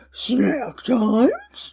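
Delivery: swooping voice like a cartoon dog. Imitating the cartoon dog's partial talking: Scooby-Doo voice. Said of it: "partial talking".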